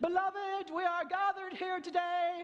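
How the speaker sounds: solemn, high, slow preacher-style church voice. Showing how her kids know her church voice, in church voice. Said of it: "my church voice like this".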